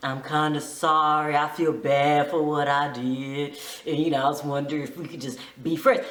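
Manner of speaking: put-on deep smooth voice. Retelling a man's apology to a woman who cut him off, imitating a deep, smooth voice. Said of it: "deep and smooth like".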